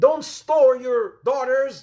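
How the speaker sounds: slow, loud, high, urgent pleading.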